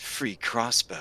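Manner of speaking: hushed, low whisper. Narrating a game, the speaker gives the harpy's words in a low whisper. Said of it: "a low whisper".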